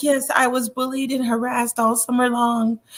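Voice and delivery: gentle, light, soft motherly voice. Describing how she talked to get people back on her side: imitating her light motherly voice. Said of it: "with how she was talking with the light voice, the motherly tone, like".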